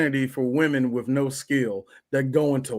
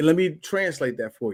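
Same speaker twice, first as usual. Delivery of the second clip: normal talking voice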